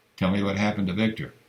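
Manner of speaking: ordinary delivery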